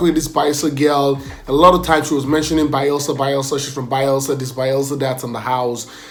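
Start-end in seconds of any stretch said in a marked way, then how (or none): none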